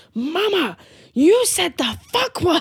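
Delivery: put-on small child's loud, high, drawn-out voice. Mother retells her son calling her out after she swore, loud child announcement impression. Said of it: "he loudly announced".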